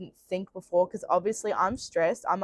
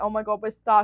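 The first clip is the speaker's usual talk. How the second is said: imitated crying, tearful voice; 2 semitones higher than usual. Retelling getting the car stuck in a ditch, imitating own past crying. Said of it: "At this point, I'm crying".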